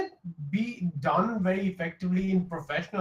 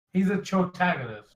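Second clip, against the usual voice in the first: plain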